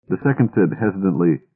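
ordinary delivery

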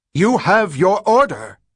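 screeching, shrill, very high-pitched shriek. The one giving orders tells the sergeant to shoot, shrieking. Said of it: "shrieked Rachel".

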